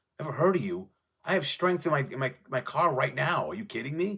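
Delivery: thrilled, can't-believe-it excitement. Retelling a musician's reply on meeting someone: imitating a psyched, excited reply.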